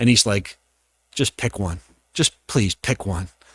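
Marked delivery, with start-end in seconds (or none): 1.1-3.3 soft, begging mutter under the breath. Retelling a weary agent's reaction to a picky buyer: imitating someone muttering under breath.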